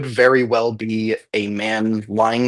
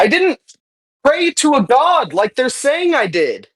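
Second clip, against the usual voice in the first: very high, desperate, begging plea. Voicing a man whose motives the players are trying to read, pleading. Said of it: "sense motive his pleading".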